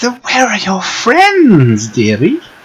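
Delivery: put-on very high, crackling old crone voice. Game narrator voicing a crone questioning a player, in a crackly old crone voice. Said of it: "Her voice crackles like dry weeds".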